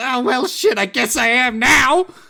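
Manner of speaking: high-pitched witch voice. Voicing a witch rising from a cauldron, answering an apology: voicing a witch character. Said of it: "And she goes".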